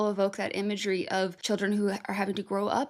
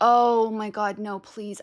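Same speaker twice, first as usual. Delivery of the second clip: loud, drawn-out, desperate pleading and begging; 6 dB louder than usual. Realizing something has been muted for who knows how long, desperately begging. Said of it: "I'm actually begging".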